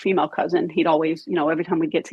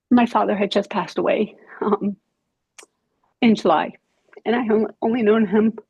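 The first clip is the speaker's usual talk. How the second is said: speaking through tears, higher; 4 semitones higher than usual. Recounting a hard year to others, crying while talking. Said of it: "Okay, stop crying".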